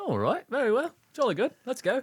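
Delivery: over-the-top fake posh English accent, very high. Host opening an episode set in England, with a co-host: terrible put-on British accent. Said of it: "enjoy our terrible accents".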